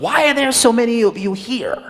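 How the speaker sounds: hostile, confrontational tone. Retelling a man's question at an event: imitating a belligerent question. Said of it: "In, like, a very belligerent way".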